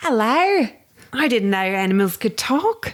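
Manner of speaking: high, slow, put-on Australian accent. Playing a kangaroo in a talking-animal game: put-on Australian accent. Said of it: "that's the form of Australian you sounded like".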